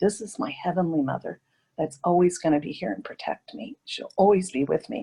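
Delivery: plain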